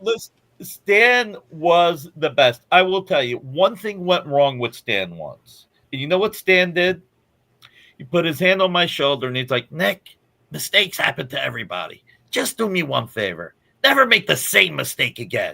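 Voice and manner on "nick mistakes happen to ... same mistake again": swooping, animated voice with big pitch swings. Retelling Stan Lee's advice after a mistake: Stan Lee impression. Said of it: "I love your impersonation".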